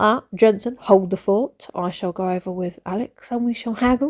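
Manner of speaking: ordinary delivery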